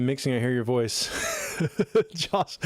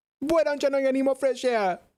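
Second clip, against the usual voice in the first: mock Caribbean accent, much higher; 12 semitones higher than usual. Demonstrating a mimicked Caribbean voice, mock Caribbean accent. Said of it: "That's probably how I'd say it".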